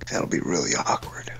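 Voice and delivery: fake seductive voice. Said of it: "that was Grizzly's sexy voice".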